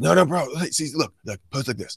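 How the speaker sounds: mock high, really drunk man voice. Retelling what a drunk stranger at a bar said: imitating a really drunk guy. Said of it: "And he goes".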